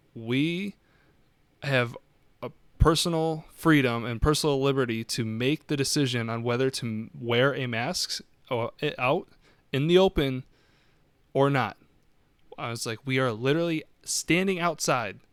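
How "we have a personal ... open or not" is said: plain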